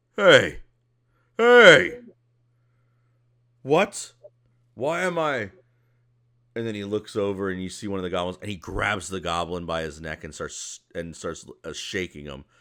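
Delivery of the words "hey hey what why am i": shrill, loud, dragged-out, swooping ogre yell. Voicing an ogre who looks over among the goblins: ogre voice. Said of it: "one of the ogres looks over and goes".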